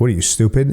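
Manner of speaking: ordinary talk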